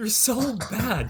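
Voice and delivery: high, slow, tilted, raging rant. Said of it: "he's just like".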